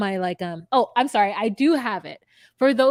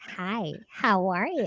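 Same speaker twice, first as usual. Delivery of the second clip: mock baby talk, quieter; 5 dB quieter than usual. Imitating how a phone call greeting goes: imitating baby talk. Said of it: "a conversation in baby talk".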